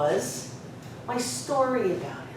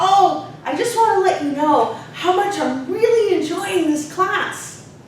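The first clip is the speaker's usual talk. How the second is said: put-on high, eager, youthful childlike voice. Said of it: "youthful, childlike way of speaking".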